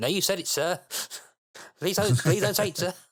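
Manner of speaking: very high, loud, furiously polite tone. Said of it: "I like how polite Crichton is when he's really pissed off".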